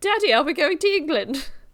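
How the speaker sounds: high put-on British accent. Quoting Casper, who keeps talking about England: British accent as Casper. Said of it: "and a British accent".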